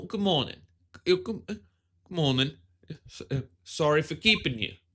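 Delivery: put-on pretentious British accent. Voicing a game character's greeting: pretentious British voice. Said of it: "I gotta get into a really pretentious British vo-".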